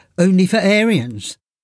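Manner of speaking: ordinary talk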